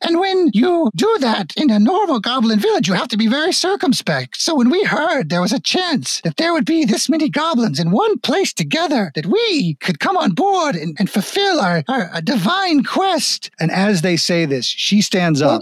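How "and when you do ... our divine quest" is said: put-on frail elderly goblin woman voice, very high, swooping. A creature disguised as an elderly goblin woman speaks before dropping its disguise: elderly goblin woman voice. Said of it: "And it's actually the very, very elderly goblin woman in the wheelchair going, / and all appearance of her being a frail old woman starts to melt away as her body starts to twist and extend into a lar".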